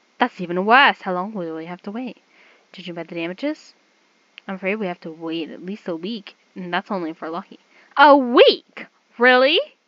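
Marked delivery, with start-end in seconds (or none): 8.0-9.6 very loud, high-pitched, ear-splitting yell. Told they must wait at least a week for the damaged magic circle, loud shouting. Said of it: "You're hurting my ears. Lower your damn voice".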